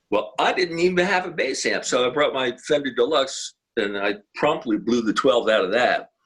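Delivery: ordinary delivery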